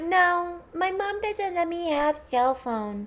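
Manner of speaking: mocking, very high, drawn-out little baby voice. Retelling how a girl answered an interview question; imitating a little baby voice. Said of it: "With her little baby voice".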